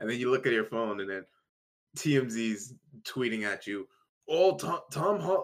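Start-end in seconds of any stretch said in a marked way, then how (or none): 4.3-5.5 put-on Scottish accent, higher pitch. Imagining a gossip site tweeting at a celebrity: Scottish accent. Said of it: "I don't know why I'm making T M Z Scottish".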